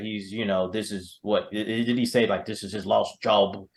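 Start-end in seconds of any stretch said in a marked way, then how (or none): 2.4-3.5 bad, put-on British accent. Quoting a line from the movie in a terrible british accent. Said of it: "That's my terrible British accent".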